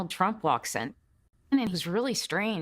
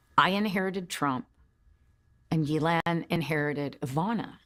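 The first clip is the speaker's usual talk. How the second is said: normal talking voice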